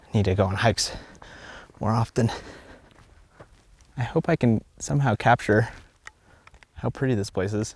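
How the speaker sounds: winded, huffing and puffing. Speaker on a hike, talking while taking photos, out of breath. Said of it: "I'm huffing and puffing".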